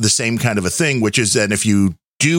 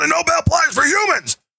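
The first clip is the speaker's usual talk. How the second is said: put-on ranting talk-show host voice, pitched higher. Retelling a rant on the last show: Alex Jones impression. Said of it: "That's a good Alex Jones impression".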